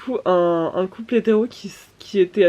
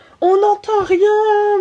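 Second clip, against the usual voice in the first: shrill, very high, loud, long holler; 13 semitones higher, 5 dB louder than usual. Retelling what a drunk woman yelled at a concert: imitating someone yelling. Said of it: "elle gueulait".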